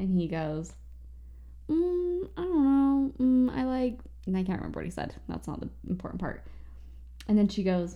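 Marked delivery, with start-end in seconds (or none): 1.7-4.0 slow, high, drawn-out mumble through a full mouth. Retelling a boy answering a girl's question, imitating talking with mouth full. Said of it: "the boy has full food in his mouth".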